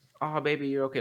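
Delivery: put-on comforting dad voice. Imagining how they would have reacted to someone panicking, mock-comforting dad mode. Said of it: "like dad mode".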